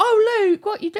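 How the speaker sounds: very high, caricatured, comical voice. Retelling what a friend's mum called out on speakerphone: funny voice imitating a friend's mum. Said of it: "because it sounds kind of funny voice".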